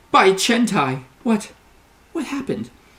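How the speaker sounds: very high shocked stammer, rising in pitch. Narrator voicing a woman who sees the gutted citadel, stammering in shock. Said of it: "She stammers".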